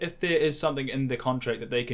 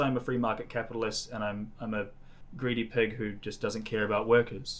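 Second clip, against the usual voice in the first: ordinary talk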